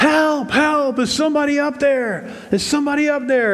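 high, loud yelling.

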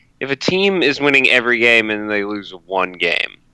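normal talking voice

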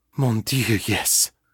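gasping, breathy delivery. Narrating a man's reply to a woman's question, gasping. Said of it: "he gasped".

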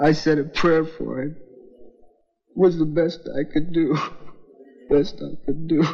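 in tears. Telling of digging a grave by hand and burying someone, crying. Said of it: "Crying like a kid".

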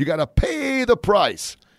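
very high-pitched, loud voice with swooping pitch. Imitating a speaker quoted about success: high-pitched Zig Ziglar voice. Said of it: "he'd get his voice real high".

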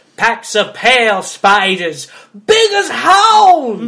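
put-on high old-man voice, "hounds" drawn out. Acting out what she tells Bran about the spiders, in an old man impression. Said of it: "old man impression".

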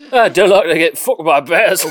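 Cockney accent. Redoing his previous line because it should have been in a Cockney accent. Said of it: "Should have said that in a Cockney accent".

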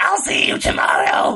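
ominous, sinister, menacing, threatening voice. A player shows that anything said in that character's voice sounds menacing; menacing voice. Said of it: "everything with that voice sounds menacing".

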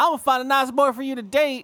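put-on very high, loud, horrible Southern accent. Playing a stereotypical movie mom, in a horrible Southern accent. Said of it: "doing this like horrible southern accent".

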